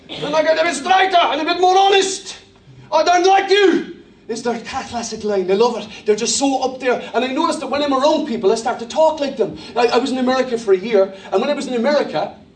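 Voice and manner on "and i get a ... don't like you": put-on South African accent, pitched up. Speaker shows how he talks around South African people; put-on South African accent. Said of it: "I begin to talk a little bit like this".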